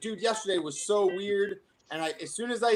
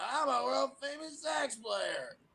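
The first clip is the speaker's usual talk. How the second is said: drawn-out, high-pitched slow voice; 6 semitones higher, 6 dB quieter than usual. Retelling what a customer said at the store, imitating the customer's voice. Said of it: "and this is what he sounded like".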